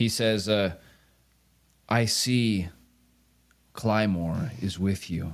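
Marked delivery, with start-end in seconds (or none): 1.9-5.3 faraway voice, echoing as down a long hallway. A voice answers the party speaking for the Scarred Brotherhood: distant voice, as if far away. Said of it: "sounds like it's being spoken from really far away".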